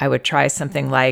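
ordinary delivery

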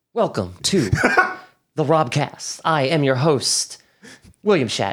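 grand, theatrical, dramatic announcer voice. Opening the Robcast as its host, doing a William Shatner impression. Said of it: "Start talking like William Shatner".

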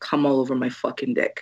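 low, deep bass, quiet whisper. Retelling words whispered in the speaker's ear: imitating a quiet whisper. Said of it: "he just whispered in my ear really quietly".

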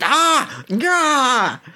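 very high, swooping, human-sounding shriek. Voicing a flaming vampire bat that swoops past: screaming in a human voice. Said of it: "screaming with a human voice".

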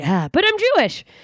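surprised, high voice with wide-ranging pitch.

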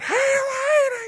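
very high hollering, drawn-out lady voice. Speaker retells yelling at a passerby from a passing car, retelling a yell.

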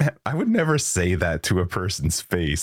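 put-on words spoken through laughter, swooping. Retelling what they said after insulting someone, laughing while talking. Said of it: "I was laughing going like".

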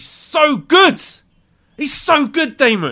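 loud, fired-up, excited yell, rising in pitch. Praising a wrestler to another speaker, yelling excitedly. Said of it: "I'm yelling again".

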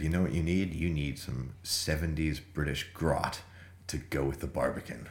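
ordinary delivery

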